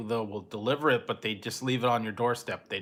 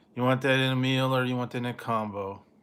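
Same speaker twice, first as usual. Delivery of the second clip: listless, glum, depressed cashier-type voice. Retelling ordering at Carl's Junior's: imitating a depressed cashier. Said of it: "he was kinda, like, all depressed".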